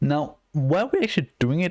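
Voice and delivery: voice breaking and cracking as it goes. A presenter explaining how a file system gets created: voice cracking. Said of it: "I'm fucking cracking my voice".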